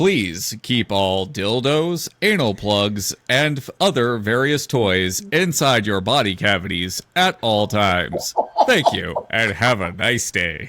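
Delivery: low, theme-park ride announcer voice. Joking after being called a real-life ride bus announcer: mock ride announcer voice. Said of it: "real-life ride bus announcer".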